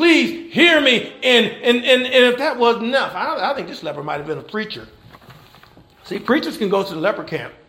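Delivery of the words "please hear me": acted, desperate begging cry, pitched high. Telling the story of a leper who came begging to be heard: retelling a screamed plea. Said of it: "begging him, screaming".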